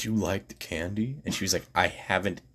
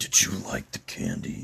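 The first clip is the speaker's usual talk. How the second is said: quiet, close whispering; 7 semitones lower than usual. Retelling asking a girl about candy, imitating own past whisper. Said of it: "whispering in her ear".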